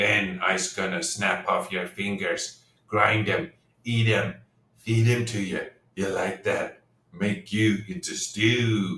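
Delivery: low, rough, grumbling goblin voice. Game master voicing the goblin jailer to the players, in a rough voice in broken Common. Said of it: "a rough voice grumbles in broken common".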